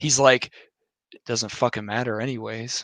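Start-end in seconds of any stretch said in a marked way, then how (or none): 1.1-2.8 put-on eerily calm voice, quieter. Retelling how the chief answered a coworker's voting question: imitating an eerily calm voice. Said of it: "too calm and collected to a point where it was".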